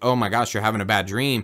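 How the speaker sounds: mock panicked freaking-out voice. Retelling how she reacted to his bad dream: imitating someone freaking out. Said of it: "freaks out".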